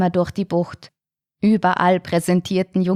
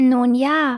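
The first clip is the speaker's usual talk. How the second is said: small, high, timid squeaky voice; 5 semitones higher than usual. A narrator reads a little shark's answer to his father, squeaky. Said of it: "piepste er schließlich".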